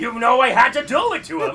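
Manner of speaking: very loud, big, high cartoon character shout. A voice actor, asked for a meme, says it as the character: Eggman voice. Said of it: "Make Eggman send".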